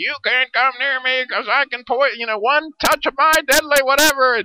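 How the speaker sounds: loud, high squeaky voice. Speaker retells a Barbie mermaid movie scene, voicing Spike: squeaky Spike voice. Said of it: "who's got this real squeaky voice".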